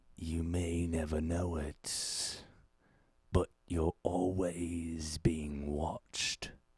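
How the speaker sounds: eerie, creepy, scary, sinister voice. Asked to say something scary, the speaker answers in a creepy scary voice. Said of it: "That's a creepy voice. Say something scary".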